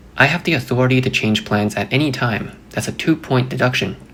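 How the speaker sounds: ordinary talk, nothing marked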